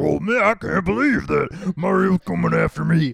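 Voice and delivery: terrible, cheap villain voice, rough, rasping and high. Describing an old Mario game, imitating how Bowser is voiced: terrible Bowser voice. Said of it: "he has a terrible voice. It sounds like me being like".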